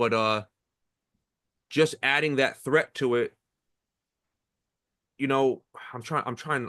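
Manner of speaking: stuttering over words. Discussing base stealing in baseball, speaking with a stutter. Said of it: "I'm stuttering is my problem".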